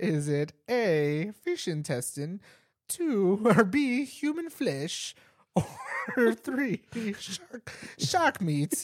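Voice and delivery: high-pitched, put-on German-accented delivery. Recounting a man's multiple-choice question, imitating his german accent. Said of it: "He had a German accent too".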